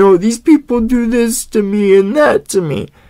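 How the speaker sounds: mock crying, whining voice. Mocking the other speaker's complaints on YouTube: imitating someone whining. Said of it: "you're the one always crying on YouTube".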